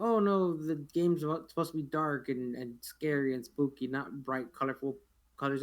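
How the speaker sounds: ordinary talk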